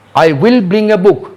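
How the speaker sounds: will strongly emphasized, hit hard. Teaching English emphasis with I will bring a book, strong stress on will. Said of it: "इसी तरह जोर देना पड़ेगा विल का ऊपर".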